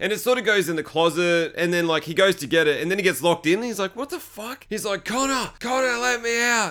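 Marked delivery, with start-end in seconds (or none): 4.7-6.7 high, drawn-out, pleading scream. Telling a story, voicing a man locked in a closet: retelling someone screaming. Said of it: "he's screaming".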